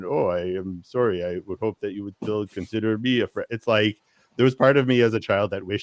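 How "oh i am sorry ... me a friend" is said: put-on robotic speech. Retelling two characters' robotic conversation: imitating a robotic voice. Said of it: "robotic conversation".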